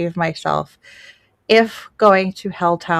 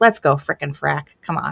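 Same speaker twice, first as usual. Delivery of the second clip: put-on irritated voice, lower; 3 semitones lower than usual. Retelling what dad said when irritated with the kids: imitating dad being irritated. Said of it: "he would always call us frickin' Frack when he would get irritated".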